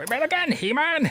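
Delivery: very high-pitched cartoon villain voice. Showing off the voices they can do, the speaker does the Skeletor voice. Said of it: "I can literally do the Skeletor voice".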